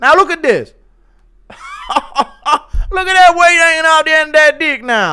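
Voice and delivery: loud, very high pitched, weak Irish voice. Asked for an impression of DC doing a breakdown of the pick with drawings, give a DC impression. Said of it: "why is your D impression just your Ian Gary voice".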